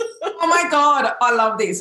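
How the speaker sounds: high, drawn-out, thrilled, gushing excited exclaim. Talking about spiritual entrepreneurs and the missing piece, excited yelling. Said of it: "i'm yelling because i'm so excited".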